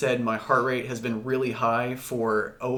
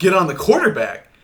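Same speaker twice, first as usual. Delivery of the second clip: put-on yell, higher and louder; 5 semitones higher, 9 dB louder than usual. Retelling how the director yelled at camera one: imitating a yelling director. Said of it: "my director is yelling at me".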